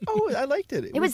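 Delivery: mock very high motherly voice. Imitating a mother praising an interview: imitating mom's really high voice. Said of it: "When her voice goes really high".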